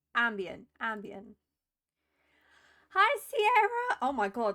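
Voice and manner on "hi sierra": very high, loud voice crack. Greeting sierra after choosing some music, voice cracking. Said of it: "my voice broke".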